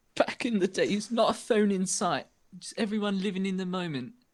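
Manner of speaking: put-on British accent. Reminiscing about families gathering on christmas eve, said in a british accent. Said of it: "I'm not sure why I was British for that".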